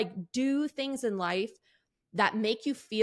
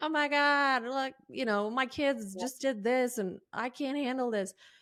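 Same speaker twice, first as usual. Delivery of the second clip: weepy, overwhelmed, tearful crying outburst. Retelling own posts on Instagram about the kids: imitating own past crying.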